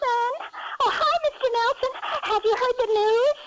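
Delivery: very high, excited voice. A caller, asked by the host, redoes the high voice he used when excited. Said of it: "can you still say that high voice when you got excited".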